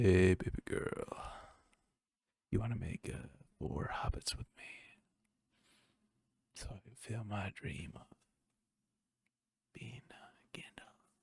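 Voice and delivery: whispered, hushed, breathy, creepy man's voice. Joking about how to phrase a line to a woman, creepy dude voice. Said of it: "I got to say it like a, a creepy dude".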